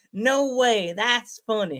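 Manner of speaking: slow, put-on Georgia Southern drawl. Retelling what a friend said when told the story: imitating her Georgia accent. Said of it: "She has the accent like her dad".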